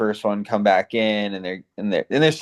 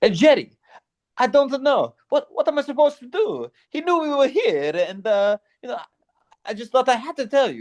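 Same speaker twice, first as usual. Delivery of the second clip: put-on very high, lilting, sing-song Italian accent. Describing an Italian accent heard in Seinfeld: sing-song Italian accent, Seinfeld-style. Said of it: "Italian accents ... very sing-songy, sort of like".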